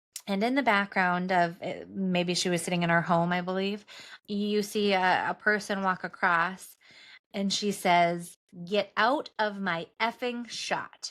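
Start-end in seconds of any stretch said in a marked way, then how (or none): 8.7-11.1 slow, curt, severe, rude and stern. Retelling what she said to a staffer walking through her shot: imitating a stern, rude order. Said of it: "Very sternly, very rudely".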